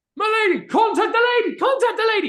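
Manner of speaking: distant, very high, very loud shouts. Voicing townsfolk raising the alarm, distant shouts. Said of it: "You guys begin to hear shouts".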